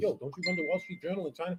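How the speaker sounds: barely audible, very quiet half-whispered aside. Retelling asking someone about his job: retelling a half-whisper. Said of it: "I whispered to him".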